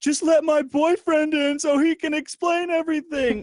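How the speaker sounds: very loud, very high wailing, sobbing scream. Retelling a woman in court begging to let her boyfriend in: imitating Jessica Blum sobbing and screaming. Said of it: "breaks down sobbing, screaming, like".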